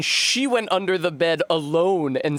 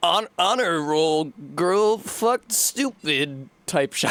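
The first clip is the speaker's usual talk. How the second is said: slow cartoon character voice, words drawn out. Mid-conversation, the speaker slips into a Xavier: Renegade Angel voice. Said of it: "I don't know why I said that in Xavier Renegade Angel voice".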